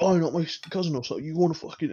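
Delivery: put-on scrawny, high, chavvy kid voice. Retelling a girl's cousin coming up to him, imitating a chavvy kid. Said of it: "very scrawny but really chavvy".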